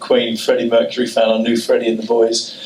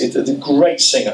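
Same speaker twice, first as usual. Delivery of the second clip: ordinary talk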